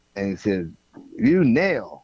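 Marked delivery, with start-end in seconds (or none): 1.2-1.9 put-on high, loud, broken English with slight Dominican accent. Retelling what a shortstop said: Rafael Santana impression, broken accent. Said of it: "he had a little broken accent".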